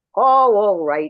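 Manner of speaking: loud, gruff, grudging tone. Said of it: "She was very gruff".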